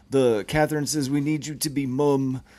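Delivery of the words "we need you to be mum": really bad fake put-on English accent. Recounting a character's line to a friend, bad English accent. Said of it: "really bad English accent that I just".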